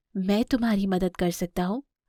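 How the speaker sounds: ordinary delivery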